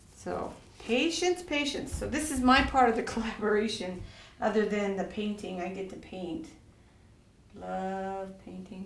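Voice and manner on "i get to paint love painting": very quiet, hushed, heavily sarcastic delivery. Talking through their part of a resin collaboration, with heavy sarcasm. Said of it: "Heavy sarcasm in that".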